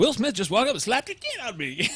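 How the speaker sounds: high, swooping comic voice with hard pitch swings. Quoting a comedian about being slapped: Chris Rock impression. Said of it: "because I talk like Chris Rock".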